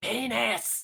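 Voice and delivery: shrill, high-pitched goblin voice yelling. Game master voices a goblin running toward the players, shrill goblin voice shouting. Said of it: "a shrill goblinoid voice shouting in common".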